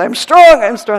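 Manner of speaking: huge, very loud, booming, proclaiming voice. The speaker acts out how he said it, in a booming voice. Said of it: "he just goes booming voice like this".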